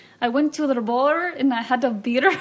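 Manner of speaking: attempted, amateur put-on Irish accent. Asked to redo the first accent from the other day, attempted Irish accent. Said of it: "clearly that's Irish".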